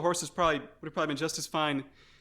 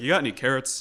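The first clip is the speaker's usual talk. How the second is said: lowered put-on horse voice; 2 semitones lower than usual. Voicing the horse Terry talking telepathically to a player: lower voice as Terry the horse. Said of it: "I'm telepathically talking in a lower voice now".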